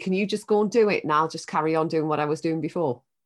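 ordinary talk

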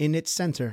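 ordinary delivery

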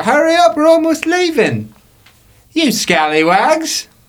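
very high, loud shout. Voicing a first mate shouting down at players to hurry: shouting from the crow's nest. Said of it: "she starts shouting down below".

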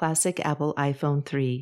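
ordinary delivery

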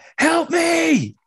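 very high-pitched, desperate scream. Retelling a film scene where a voice screams for help: imitating Shepard screaming. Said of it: "Shepard's voice screaming".

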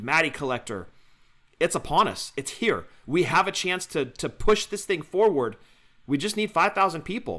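usual speaking voice

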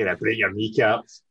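sinister Northern Irish accent. An actress, asked for a proper accent, has another go: sinister Northern Irish accent. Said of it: "sinister Northern Irish terrorist".

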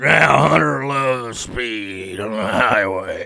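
put-on drunk-sounding, very slow speech. Imitating a documentary narrator who sounds drunk: Nick Nolte narrator impression. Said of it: "sounds so drunk".

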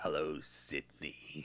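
soft, breathy, creepy killer-voice whisper. Reminiscing about Scary Movie, the speaker quotes it in the Scary Movie killer voice. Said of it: "I'm still doing that voice too".

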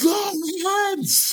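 pushed-up, very high scream. Calling out in a stuck hallway while rats close in: screaming louder. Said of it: "I scream a little louder".

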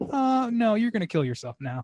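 put-on self-assured voice, high. Describing the voice on the phone in The Room, imitating a smug voice. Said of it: "that voice on the phone is pretty goddamn sure of itself".

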